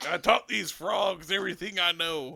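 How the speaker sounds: put-on speaking with Cajun accent. Imagining the frogs' mentor as a gator, the speaker gives a Cajun Master Splinter voice. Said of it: "with Cajun accents".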